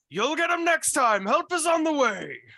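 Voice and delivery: very high, very loud yell. Describing going down a rope, quoting what another person shouted: retelling a shout. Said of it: "Jasper's just shouting".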